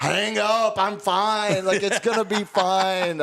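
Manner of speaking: mock screaming, high pitch. Recalling waking up while a buddy calls an ambulance: retelling a scream. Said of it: "and I just start screaming".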